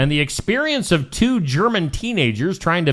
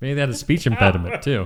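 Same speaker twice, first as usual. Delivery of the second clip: usual speaking voice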